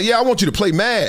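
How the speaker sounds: put-on flippant offhand tone, fast. Retelling what the wife said during a discussion: imitating someone saying it flippantly and fast. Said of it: "she just said it kind of, like, flippantly, but she said it fast".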